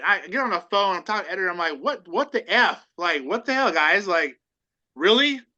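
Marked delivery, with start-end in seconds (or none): none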